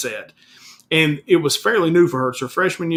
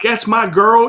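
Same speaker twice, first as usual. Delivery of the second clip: pumped-up, proud, excited cheer, loud and high; 6 semitones higher, 5 dB louder than usual. Retelling cheering for a daughter while filming: imitating own excited yell. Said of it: "So I yell, I'm like".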